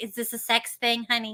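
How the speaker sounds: put-on motherly voice.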